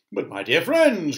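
cheerful cry with forced, effortful cheer. The old green grasshopper addresses his friends after the great journey, crying out, trying to be cheerful. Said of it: "cried the old green grasshopper, trying to be cheerful".

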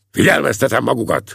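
stern, forceful, rough voice. The corporal guarding the door addresses the prisoners, firmly. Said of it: "szólt a foglyokhoz erélyesen".

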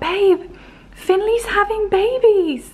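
high, slow, excited voice.

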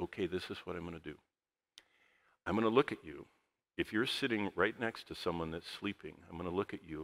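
very calm, soft low voice. Recounting addressing a class where people were falling asleep, retelling a very calm voice. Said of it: "in a very calm voice that wouldn't wake up anybody".

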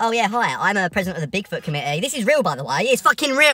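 snide, touchy, self-important, mocking, defensive tone. Mocking a defensive man in a video who insists the find is real: mocking imitation of Peter, defensive. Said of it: "bloody hell, someone's defensive".

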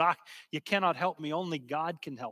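put-on Scottish brogue. Retelling a girl's words to Duncan Campbell, in a Scottish brogue. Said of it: "in her Scottish brogue".

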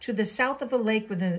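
plain reading voice

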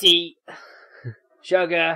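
high-pitched, loud, tin-can alien voice. Imagining a Dalek serving afternoon tea: Dalek voice. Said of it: "A Dalek serving afternoon tea, like, you, like, be like".

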